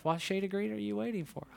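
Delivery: put-on under-breath mutter. Telling the audience what they say to themselves: retelling muttering under breath. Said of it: "I've said to myself under my breath".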